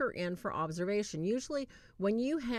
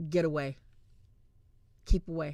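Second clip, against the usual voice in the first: deep, loud, throaty, masculine guttural voice; 4 semitones lower, 5 dB louder than usual. Retelling how a voice came from a contorting girl: guttural masculine voice. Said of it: "in this guttural, masculine voice".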